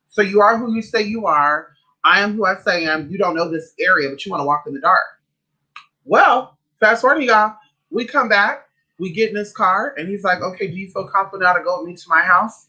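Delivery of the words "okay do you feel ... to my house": acted nonchalant, offhand casual tone. Telling listeners what a man asked in his car, mimicking a nonchalant ask. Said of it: "he said it very like nonchalantly".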